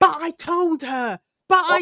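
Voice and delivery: very slow, high, drawn-out screaming. The speaker retells hearing a guy on the street last night, retelling a man screaming. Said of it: "just screaming".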